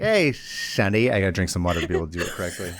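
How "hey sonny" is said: put-on whistling cartoon voice. Doing a cartoon character impression: Gopher from Winnie the Pooh voice. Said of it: "Now I just sound like Gopher".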